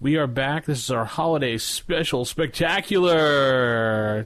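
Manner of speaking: show announcer voice. Co-host opening the podcast's holiday special episode: announcer voice. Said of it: "there's your announcer voice for you".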